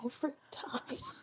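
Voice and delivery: soft whisper on the verge of tears. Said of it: "I'm about to cry now".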